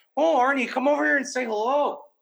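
high, coaxing, Minnesota-accented dog-talking voice. Speaker showing how they talk to their dog: Minnesota-sounding dog-talking voice. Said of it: "Chuff said I sound like a Minnesota guy".

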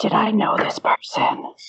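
quiet, soft, breathy whisper. Leaning over to ask another character a question: soft whisper. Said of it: "kinda whisper softly".

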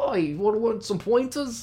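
put-on failed Boston accent, high-pitched and slow. Imitating an actor's character in a game, in an attempted boston accent. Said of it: "I don't know how to do Boston accent, but just pretend I did".

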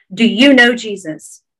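ordinary delivery

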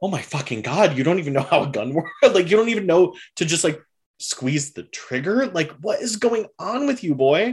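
incredulous, high-pitched, fast, disbelieving.

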